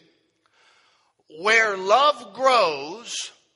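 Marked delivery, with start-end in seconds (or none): 1.4-3.1 slow, loud, clearly spelled-out dictating delivery. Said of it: "write the title down 'cause you're gonna need it".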